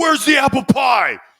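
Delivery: mock frantic outburst, very high-pitched, very loud. Retelling a moment at the team hotel, imitating someone freaking out. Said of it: "Teddy Bruschi and I freaking out".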